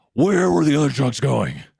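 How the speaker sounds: loud, rough, creaky, pushed-out voice.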